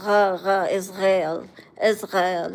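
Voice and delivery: put-on, fake wannabe French-ish accent. Teasing a group about how their speech changed over the years, doing a fake french-ish accent. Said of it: "that fake wannabe French accent".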